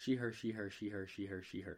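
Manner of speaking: ordinary talk, nothing marked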